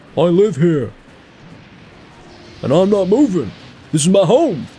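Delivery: put-on very high, swooping elderly man's voice. Impersonating someone facing a random tornado, done in an old man voice. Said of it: "great impression of like a. ... like an old man".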